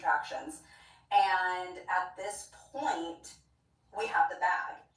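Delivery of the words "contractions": contractions said low and sarcastic. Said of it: "Like how I use those air quotes".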